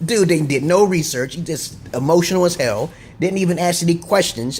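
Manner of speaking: usual speaking voice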